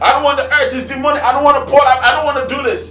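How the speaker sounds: high, fearful whine, rattled off quickly.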